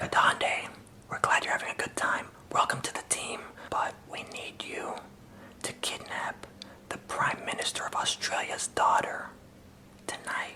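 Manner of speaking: hushed whisper, all breath, very quiet. Imagining an orientation lady leaning over and whispering to him, quiet whisper. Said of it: "whispered like all quiet".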